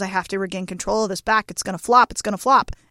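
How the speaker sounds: ordinary talk, nothing marked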